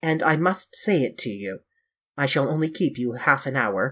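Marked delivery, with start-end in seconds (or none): none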